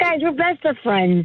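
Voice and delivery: ordinary talk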